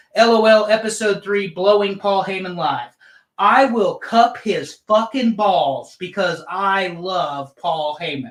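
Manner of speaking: clear, spelled-out, public announcement style. Announcing an episode title for all to hear: loud, clear voice. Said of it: "so I can say this in a loud, clear voice".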